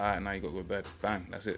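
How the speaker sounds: normal talking voice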